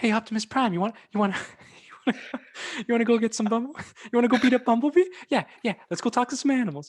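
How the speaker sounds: badly done, very high-pitched put-on squeak. Retell a YouTuber making fun of a man's voice, in a bad high-pitched voice impression. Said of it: "like high pitch".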